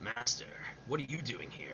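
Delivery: low, deep game-hero voice. Voicing a scene as Solid Snake: Solid Snake voice. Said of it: "I'm gonna do Solid Snake".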